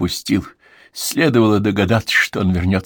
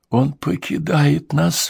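trembling, shaking whisper, much slower; 5 semitones higher than usual. Narrator reading a woman's line in a story, in a trembling whisper. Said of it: "прошептала Элеонора Сиджвик дрожащим голосом".

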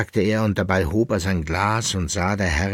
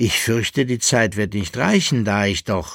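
ordinary delivery

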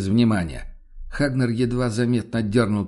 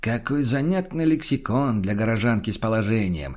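ordinary delivery

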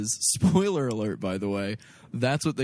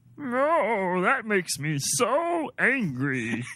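"no" stretched, very high, slow, swooping alien whine; 10 semitones higher than usual. Joking about being called a Looney Tune: Marvin the Martian voice. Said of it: "do Marvin the Martian again".

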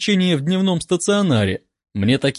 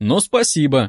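plain reading voice

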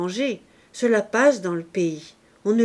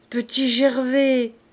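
faint, weak, barely articulate, slurred murmur; 5 semitones higher, 3 dB louder than usual. A man, after calling out in vain, murmurs the name once more: faint, barely articulate. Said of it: "d'une voix faible et presque inarticulée".

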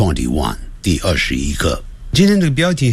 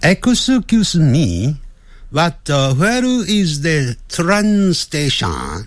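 very high-pitched voice with Japanese accent on English; 10 semitones higher than usual. Testing a voice setting, reading an English phrase in Japanese-accented English. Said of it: "有点像日本人的声音".

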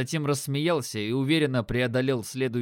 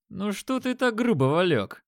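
sneering, snide, mocking, pitched-up voice; 7 semitones higher than usual. Narrator voicing the trio's red-haired leader taunting Valek, snide and mocking. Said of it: "Ехидничал их рыжий лидер".

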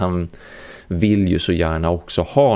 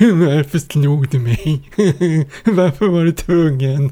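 high, pitched-up put-on storybook lion voice; 9 semitones higher, 4 dB louder than usual. Speaker voicing the cowardly lion from the book: Cowardly Lion voice. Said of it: "Han har ju den där rösten hela tiden".

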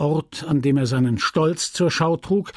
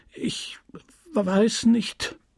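stuttering, stammering out the words; 6 semitones higher than usual. A young lad, pressed to explain himself, answers stammering. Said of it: "stotterte der junge Bursche".

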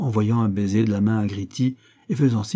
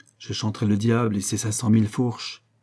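ordinary delivery

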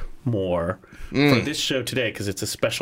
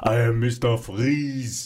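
very slow, deliberate, drawn-out put-on Austrian accent. Joking about Mr. Freeze, trying a best attempt: Schwarzenegger impression. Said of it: "I'm trying to do my best Schwarzenegger".

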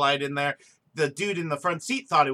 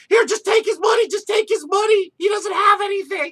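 shrill, desperate, very high, loud screaming; 7 dB louder than usual. Retelling how a man's girlfriend reacted when she thought he got shot, imitating her screaming. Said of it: "screaming like".

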